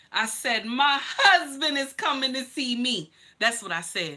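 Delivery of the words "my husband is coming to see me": put-on booming, proud, thundering delivery, pitched up, loud. Retelling answering a nurse about visitors, retelling a proud, thunderous line. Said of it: "with a proud thunder in my voice".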